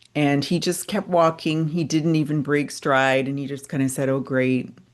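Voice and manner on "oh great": plain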